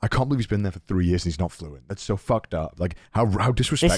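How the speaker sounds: plain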